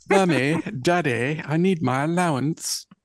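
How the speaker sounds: put-on posh accent laid on thick, spoiled and bratty. Asked to play Angel in a bit, taking on the role: posh accent as Angel. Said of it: "I'll put on a really posh accent".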